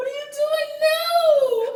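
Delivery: high, slow, loud, teary squeal, overwhelmed and crying.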